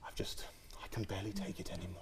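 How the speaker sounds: very quiet, hushed, disappointed teacher voice. Speaker describing teachers at school, imitating a disappointed teacher tone. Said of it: "that disappointed tone".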